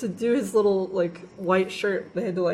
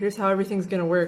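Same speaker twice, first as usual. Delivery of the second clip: normal talking voice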